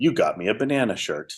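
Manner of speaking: mock, bone-dry, no-joke deadpan delivery. Retelling a bandmate's reply over lunch: imitating Hans, deadpan. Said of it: "with this complete deadpan look".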